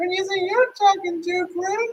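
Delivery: put-on very high creepy old-man voice. Acting out a Family Guy scene, replying to Grim, in Herbert from Family Guy voice. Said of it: "You're a creepy old man".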